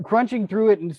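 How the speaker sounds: plain reading voice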